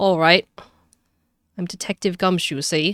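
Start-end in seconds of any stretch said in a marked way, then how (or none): 1.6-2.9 put-on Cockney accent. Voicing the detective as he introduces himself, Detective Gumshoe in a Cockney accent. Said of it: "I'll give him a Cockney accent in the meantime".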